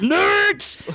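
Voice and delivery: loud yell. Retelling what two guys in the front yelled: imitating someone yelling. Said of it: "two guys in the front that yelled".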